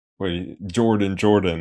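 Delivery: ordinary delivery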